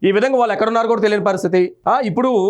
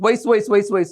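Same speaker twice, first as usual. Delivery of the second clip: normal talking voice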